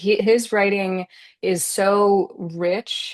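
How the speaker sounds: slow, choked-up, emotional voice catching in throat. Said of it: "I'm, like, getting choked up".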